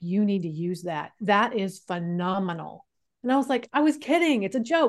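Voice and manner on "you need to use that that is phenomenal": mock dead serious tone, much slower. Speaker recounts a man's reply to their joke, retelling him dead serious. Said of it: "he got dead serious and was like".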